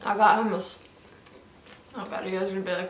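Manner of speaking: talking with mouth full. Talking to viewers about her outfit, talking with mouth full. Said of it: "why is she talking to us with her mouth full?".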